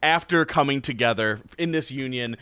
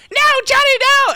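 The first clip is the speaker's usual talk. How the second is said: very high, shrill, loud, badly done put-on yelp; 7 dB louder than usual. Retelling eating Riggy, who begged him to stop: worst Riggy impression. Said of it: "this is my worst Riggy impression".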